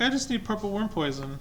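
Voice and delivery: mock high, innocent, unassuming, harmless-sounding tone. Mocking a player who asked for poison: imitating an unassuming innocent tone. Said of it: "So unassuming. You're like".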